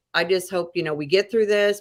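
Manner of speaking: normal talking voice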